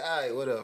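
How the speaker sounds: acted indifferent, offhand tone. Retelling how own reply comes out to a spouse: imitating own nonchalant tone. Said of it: "apparently I'm too nonchalant".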